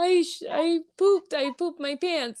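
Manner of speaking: put-on sobbing, very high and slow. Retelling telling the nurse what happened: imitating own past crying. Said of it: "And I was, like, crying".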